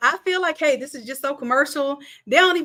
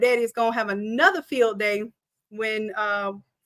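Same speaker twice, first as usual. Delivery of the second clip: normal talking voice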